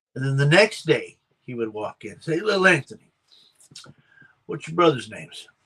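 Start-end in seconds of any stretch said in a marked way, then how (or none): 2.4-5.5 offhand, familiar, casual everyday tone. Retelling how Mister G questioned him each day, imitating Mister G's slow talk. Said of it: "He he talks slow".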